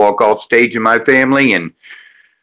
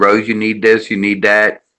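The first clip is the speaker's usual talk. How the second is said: plain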